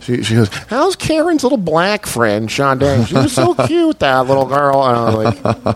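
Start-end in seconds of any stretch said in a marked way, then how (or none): 0.5-4.8 put-on corny, sing-song Ohio mom accent. Retelling what mom said about a friend, imitating mom's Ohio accent. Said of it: "her Ohio accent".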